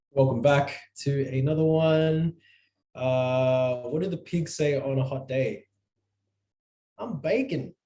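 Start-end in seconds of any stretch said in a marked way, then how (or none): 6.9-7.6 Australian accent, pitched up. Delivering a pig joke punchline: Aussie accent. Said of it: "Only works with an Aussie accent".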